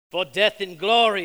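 loud, rallying battle cry yelled out.

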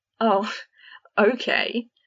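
loud, scornful, contemptuous retort. Fred answers someone who has just raised a wand, scornful. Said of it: "said Fred scornfully".

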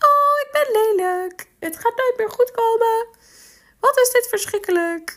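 goofy, squeaky, very high silly put-on voice. Demonstrating talking to yourself as an example, in a silly put-on voice. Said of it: "Probeer dat maar eens in een gek stemmetje tegen jezelf te zeggen. Ik moet het toch even voordoen".

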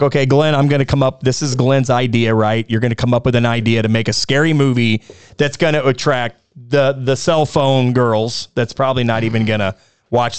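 ordinary talk

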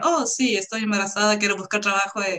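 mock-sarcastic tone. Quoting a work about maternity, imitating a super sarcastic tone. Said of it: "con ese tono súper sarcástico".

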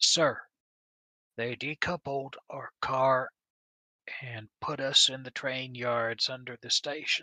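half-whispered, under the breath. Chadley leans in close to the officer in the compartment, half-whispering. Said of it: "Chadley leans in and whispers".

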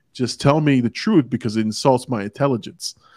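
ordinary talk, nothing marked

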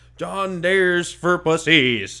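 mock shouting. Recalling someone screaming by the car window, retelling a scream. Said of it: "just screaming".

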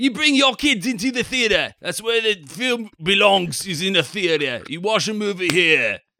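northern English accent. Riffing with other speakers on a mock movie pitch, in a northern English accent. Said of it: "I think that's North. That's like Manchester".

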